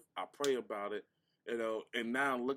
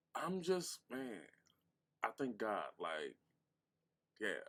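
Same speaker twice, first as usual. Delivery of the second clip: soft voice, fighting back tears; 5 dB quieter than usual. Speaking to Terry after hearing the news, holding back tears. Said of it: "I trying not to get emotional right now".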